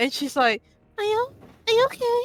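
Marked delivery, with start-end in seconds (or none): 1.0-2.2 put-on shy voice, pitched much higher. Describing a character without her mask, the speaker imitates her high shy voice. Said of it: "her voice is way low, uh, way, way higher, and she's more shy".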